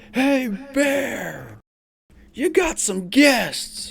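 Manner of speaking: very high, loud bellowing roar, "bear" stretched out. Recounting how a man turned and called out that guests had arrived, retelling a loud roar. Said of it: "lets out like a loud, loud roar of a voice".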